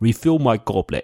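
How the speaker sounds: put-on heavy, laid-on British accent. Retelling a scene from the show's credit roll, the speaker quotes Josiah's thick British accent. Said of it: "does like a thick British accent".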